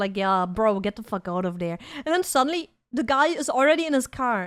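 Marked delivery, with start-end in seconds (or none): 0.2-1.8 mock relaxed, unbothered, laid-back tone. Retelling how a person on Discord sounded: imitating a chill tone. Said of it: "he was so chill".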